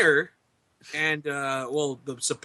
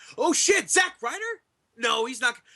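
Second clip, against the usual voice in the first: stunned, freaking out. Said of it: "they're just like".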